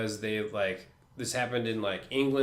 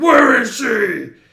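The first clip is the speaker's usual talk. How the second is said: loud, high-pitched yelling; 13 semitones higher, 15 dB louder than usual. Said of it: "he's just like".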